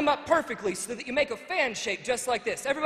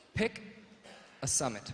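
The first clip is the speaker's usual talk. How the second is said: hushed whisper, kept low and soft; 11 semitones lower, 10 dB quieter than usual. Leading a crowd in a phrase they repeat back: whispering low. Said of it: "I just want you to whisper real low".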